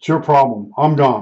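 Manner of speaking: normal talking voice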